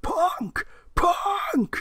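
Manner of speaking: crazy, very high, swooping, excited cowboy yell. Recounting an entrance, doing JR's excited crazy cowboy yell of the name. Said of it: "in his very excited, crazy cowboy voice".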